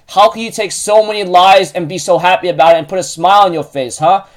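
ordinary talk

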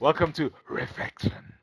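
grand godlike voice-of-God voice. A host welcoming everyone to reflection redoes the welcome in the voice of god. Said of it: "I'll use the voice of God".

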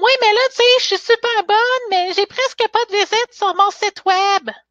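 put-on very high voice of a ten-year-old girl. Explaining why she created a sales bootcamp, imitating her 10-year-old niece. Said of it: "que j'imite bien ma petite nièce de 10 ans".

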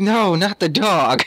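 mournful, high, very slow and drawn out. Retelling a movie scene where a character reacts: imitating a sad character. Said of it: "all sad face still".

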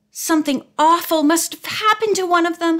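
high, gasped-out, caught-breath delivery. Narrator reads Judy as they hear a car arrive; gasped. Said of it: "Judy gasped".

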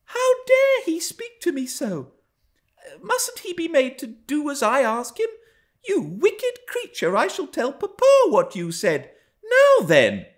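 very high, loud, swooping, indignant, astonished outcry. A girl turns to Ellen about Hareton, crying out in astonishment. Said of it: "cried she, staring fixed in astonishment".

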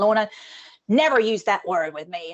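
really bad American accent. Speaker quoting what a senior executive once told her, bad American accent. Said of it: "that's really bad American accent".

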